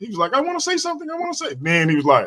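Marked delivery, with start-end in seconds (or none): 0.3-1.5 super high-pitched, squeaky little voice. Imitating another speaker who asked to talk: imitating a super high voice. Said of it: "his voice was super high".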